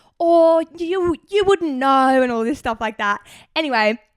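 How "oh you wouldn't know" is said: put-on British accent, high, slow, very drawn out. Retelling pretending to be from Ipswich when asked where, put-on British accent. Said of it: "I was talking in a British accent".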